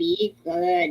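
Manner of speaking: put-on alien creature voice. Copying how someone in the group says it: e.t. voice. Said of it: "You sound just like ET when you say it".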